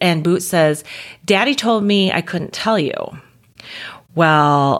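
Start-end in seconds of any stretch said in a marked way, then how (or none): none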